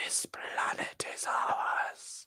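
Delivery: very slow, soft, hushed, breathy whisper. Asked to do the voice, performing the Sea Devil voice. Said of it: "I am the Sea Devil voice".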